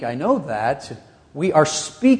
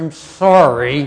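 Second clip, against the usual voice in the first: mock grudging mutter through clenched teeth; 3 dB louder than usual. Describing a child told by parents to apologize to a sibling, imitating a gritted-teeth mutter. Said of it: "mutters through gritted teeth".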